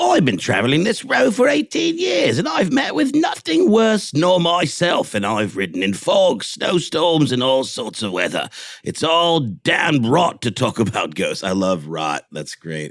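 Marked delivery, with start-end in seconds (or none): 0.0-11.4 put-on Cockney accent, pitched way up, swooping. Reading a quote aloud to the other speaker: cockney accent. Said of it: "I had to go with the Cockney".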